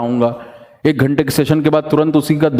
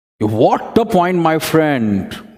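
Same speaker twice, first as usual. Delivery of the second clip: emphatic, slightly raised voice. Teaching how to say a phrase of praise, with voice raised a little. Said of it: "voice का जो degree है वो ऊपर होना चाहिए थोड़ा सा".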